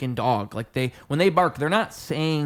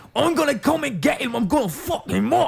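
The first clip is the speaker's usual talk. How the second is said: very high-pitched, taunting trash-talk tone; 12 semitones higher, 3 dB louder than usual. Mimicking a fighter who is hard to understand: Conor McGregor impression. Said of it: "Conor McGregor is like, he's like".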